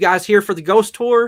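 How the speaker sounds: put-on very high, very loud Southern accent. Retelling a guy coming out the doors for a ghost tour; southern accent. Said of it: "this guy coming out with this southern accent".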